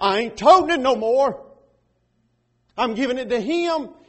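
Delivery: loud, high, defiant declaration.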